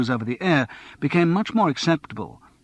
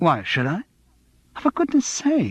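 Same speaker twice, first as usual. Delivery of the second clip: fed-up, put-upon, exasperated, rising; 4 semitones higher than usual. Reading a novel aloud, a character answers a question about being upset: exasperated. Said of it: "Steve sounded exasperated".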